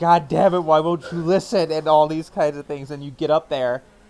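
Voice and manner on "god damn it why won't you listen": frantic, desperate screaming yell. Recounting a game scene, a man screams while holding someone's arm; retelling a scream. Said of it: "he's screaming at Emily".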